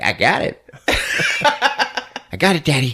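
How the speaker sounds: high, very slow, drawn-out little cat voice. Retelling a scene where the cat answers the cop: voicing Clovis the cat. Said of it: "Clovis is like".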